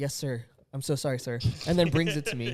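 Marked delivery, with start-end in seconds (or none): 0.0-1.4 mock groveling, put-on timid apologetic voice. Retelling how Tyler answers a request for a rinse cup: imitating Tyler groveling. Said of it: "He's like".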